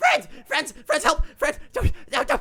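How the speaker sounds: very high, breathless, rushed, panting panicked cries. Voicing a small ratling rushing toward the group: panting panicked ratling. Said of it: "You can hear it panting now".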